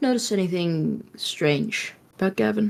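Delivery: very quiet, hushed, very low, barely-there murmur. Walking beside another character, asking her a question in a very low voice. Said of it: "she's gonna say in a very very low voice".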